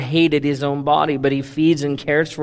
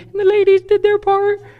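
mock woman's voice, higher; 3 dB louder than usual. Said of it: "That was my lady voice".

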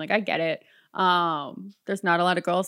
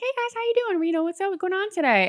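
very high, chipper, bubbly, friendly tone; 13 semitones higher than usual. Recalling how they greet the guys at the register, put-on friendly bubbly voice. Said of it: "in a friendly, pleasant, bubbly voice".

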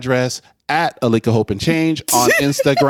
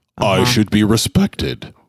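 low, grand, pompous British parliamentary oratory; 4 semitones lower than usual. Reminding his younger sibling he is the big brother: pompous British parliament orator. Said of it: "with all of the pomp and circumstance of a British member of parliament".

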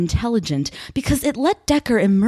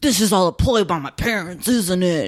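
Western-movie character voice; 2 semitones lower than usual. Retelling a movie scene where Vincent is cornered, speaking like he's from a Western. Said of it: "Why does Vincent sound like he's from a Western?".

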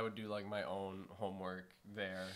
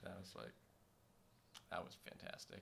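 dry, ironic, sarcastic, hushed near-whisper; 3 semitones lower, 14 dB quieter than usual. Recalling being left to run things for months while she was away, sarcastic. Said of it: "That sounds sarcastic".

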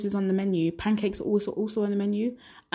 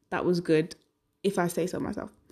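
ordinary delivery

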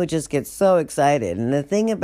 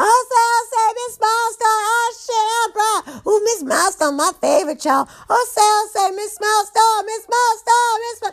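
mock shrill, very high, excited, whooping scream. Imitating jail inmates greeting miss milestone: imitating inmates screaming a greeting. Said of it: "it's the same thing".

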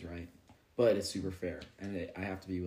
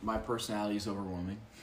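ordinary delivery

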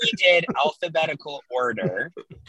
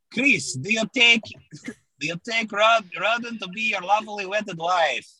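bad fake Russian accent, much higher; 6 semitones higher than usual. Imitating the officiant at the speaker's wedding, in a bad russian accent. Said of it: "that's not a great Russian accent".

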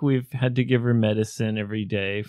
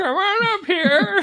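put-on very high, shrill old witch voice, calling out; 5 dB louder than usual. Echoing how the other speaker called their cat, in an old witch voice. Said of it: "Like a witch".

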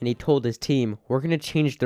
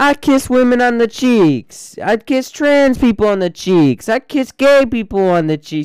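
classic put-on New York accent, loud, high, shrill; 11 semitones higher, 10 dB louder than usual. Doing a bit in a classic New York accent. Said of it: "the classic new york accent".

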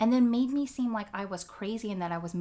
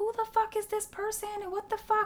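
put-on, very high yelling and screaming outburst; 12 semitones higher than usual. Retelling what the husband expected to hear: imitating expected yelling and screaming. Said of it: "to just be yelling and screaming".

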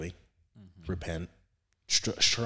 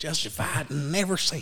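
very high-pitched, fake country accent; 9 semitones higher, 3 dB louder than usual. Explaining the word justified, the speaker puts on a country accent. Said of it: "Got to put on the country accent".

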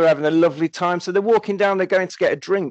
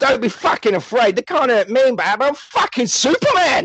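put-on London accent delivered at a raised pitch; 6 semitones higher than usual. Retelling a film scene, doing the hero's lines: Gary Daniels impression. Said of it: "It's like he's on the phone with us now".

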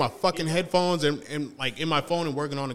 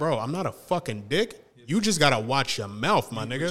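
ordinary talk

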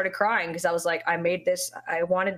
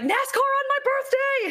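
very high, thrilled, excited squealing scream. Recalling reacting live on stream on their birthday, retelling excited screaming. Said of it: "And I was just like so excited".

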